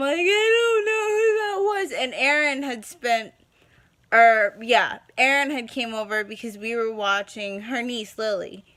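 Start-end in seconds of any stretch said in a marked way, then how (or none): 0.2-2.0 put-on very high sobbing through tears. Retelling a call to a friend: imitating herself bawling. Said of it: "and I'm just bawling".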